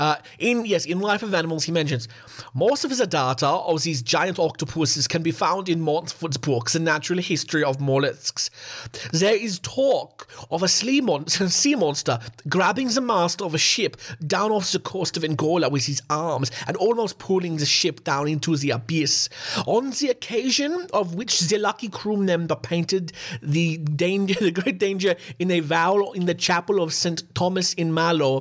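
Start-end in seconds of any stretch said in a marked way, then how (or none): 2.5-28.4 put-on German accent. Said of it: "my amazing German accent".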